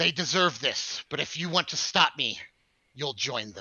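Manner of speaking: menacing, deep voice. Storyteller voices a robed man threatening the players, angry robed man's threat. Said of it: "and he says".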